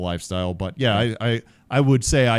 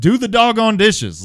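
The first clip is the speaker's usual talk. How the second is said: very high, loud, barked drill-sergeant yell; 14 semitones higher, 7 dB louder than usual. Recalling giving orders to the kids at home, retelling a sergeant-major yell. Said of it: "like yelling at him like he might".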